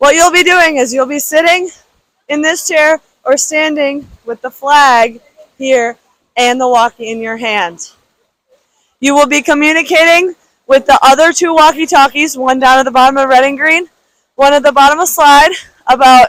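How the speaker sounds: short of breath, winded, out-of-breath delivery. Explaining someone's new job to them, winded from the stairs. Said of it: "I'm winded from the stairs".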